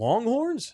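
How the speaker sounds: high, confused unsure tone. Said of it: "he got real confused".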